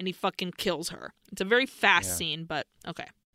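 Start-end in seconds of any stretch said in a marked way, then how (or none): none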